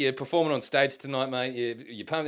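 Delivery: ordinary delivery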